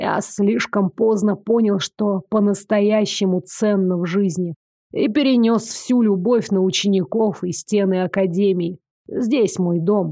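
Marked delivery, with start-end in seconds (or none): none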